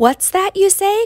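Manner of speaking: high, loud, fearful outcry full of dread. A donkey, told it will carry a rider into the city, cries out with dread. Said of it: "cried the donkey with dread".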